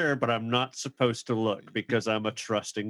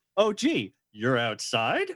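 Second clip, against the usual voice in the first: mock, laid-on fake surprise with swooping pitch. Retelling a scene where a character answers the phone: imitating Wallace's fake-surprised tone. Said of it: "I love his tone".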